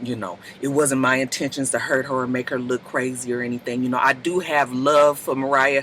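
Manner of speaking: soft-spoken, very low murmuring delivery. Retelling what Richie D said back out on the stage: soft-voiced Richie D impression. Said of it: "he all soft voiced it".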